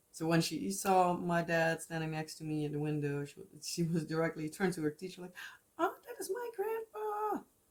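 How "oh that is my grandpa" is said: put-on very high, squeaky child voice. Retelling what her daughter told the teacher: imitating her daughter's voice, squeaky. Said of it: "when I try to do her voice, my voice squeaks".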